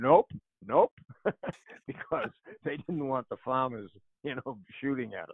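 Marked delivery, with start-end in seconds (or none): 0.0-0.9 yelled loudly. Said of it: "the Terps would all yell back".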